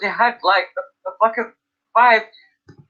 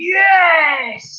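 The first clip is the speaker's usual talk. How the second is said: high shout. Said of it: "I started shouting".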